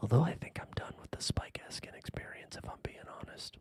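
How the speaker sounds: whispered aside. Sharing an aside about a podcast host, whispering. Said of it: "Had to whisper that".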